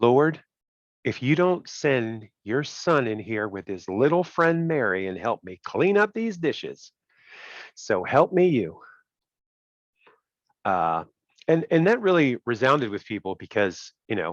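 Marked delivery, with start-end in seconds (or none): 0.0-8.8 complaining voice, pouring out. Retelling the Mary and Martha story, imagining Martha in the kitchen, imitating Martha complaining. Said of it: "I can just imagine Martha in the kitchen going".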